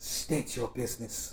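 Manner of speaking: hushed, earthy, elegant whispered voice. Addressing visitors who say they come in peace, in an earthy, elegant voice. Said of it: "In a very almost earthy, elegant sounding voice".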